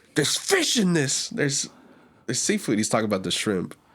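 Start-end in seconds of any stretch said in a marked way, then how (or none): 0.1-2.7 put-on panicky, alarmed, high, frantic outburst. Retelling a customer's complaint about seafood: imitating a frantic customer. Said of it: "he was very frantic".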